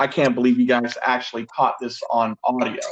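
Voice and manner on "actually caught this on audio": ordinary talk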